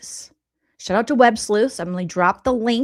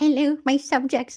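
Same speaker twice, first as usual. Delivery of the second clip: mocking put-on voice, pitched higher; 4 semitones higher, 3 dB quieter than usual. Reacting to a video, repeating Trisha's greeting back: imitating Trisha.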